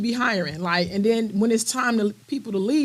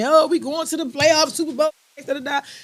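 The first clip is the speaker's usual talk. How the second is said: put-on high, overexcited, hyped screaming; 5 semitones higher than usual. Retelling what the dude in this chair was screaming: imitating someone screaming. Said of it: "the dude in my chair was screaming".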